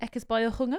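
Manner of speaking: put-on South African accent. Talking about a South African meat eater, putting on a South African accent. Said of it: "good South African accent".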